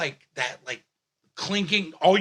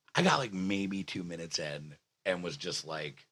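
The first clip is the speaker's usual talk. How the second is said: softer, lower, toned-down voice. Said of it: "I'm sorry, I'm yelling".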